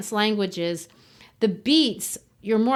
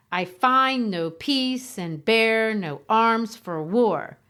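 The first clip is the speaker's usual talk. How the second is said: overdone iambic beat, heavy stress on every second word. Demonstrating a poetic line's meter, exaggerated stress on every other word. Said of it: "If I say it really exaggerated".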